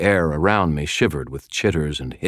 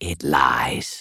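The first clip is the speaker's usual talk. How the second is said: low, hissed, insect-like buzzing creature voice; 3 semitones lower than usual. Reading a story aloud, the other spiders answer, hissing spider voice. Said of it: "hissed the other spiders".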